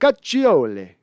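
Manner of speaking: slight touch of Italian accent on a name. Thanking a subscriber and saying their last name: little italian accent. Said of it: "with a little Italian accent on it".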